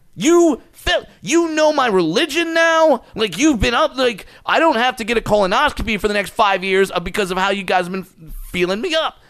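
yelling loudly. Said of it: "I yell at him".

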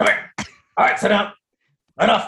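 commanding pet training voice. Speaker tells the pet to come and sit, using the dog training voice. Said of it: "That's my training voice".

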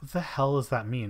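normal talking voice

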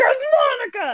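play-acted, very high-pitched excited burst. Retelling own reaction after WandaVision: imitating own excited exclaim.

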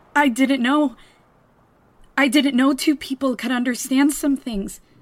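through tears. After a kiss, told that you're crying, answer while crying. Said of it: "You're crying".

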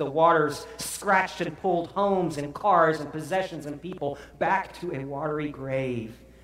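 ordinary delivery, nothing marked

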